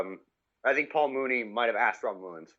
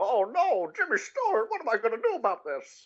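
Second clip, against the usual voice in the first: deliberately bad cartoonish voice, pitched very high; 12 semitones higher than usual. After telling someone they sound a little like him, bad cartoonish Jimmy Stewart impression. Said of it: "That is the worst Jimmy Stewart ever".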